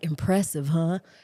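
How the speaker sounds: imitated whispering voice. Retelling what he said in the megachurch scene: imitating a whisper. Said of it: "he's whispering, he's like".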